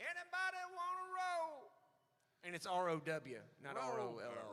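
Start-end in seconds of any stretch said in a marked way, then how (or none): 0.0-1.7 leaned-into, exaggerated, very high hawker's cry. Showing another speaker how to lean into the hot roll call impression. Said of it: "you kind of got to lean into it a little bit".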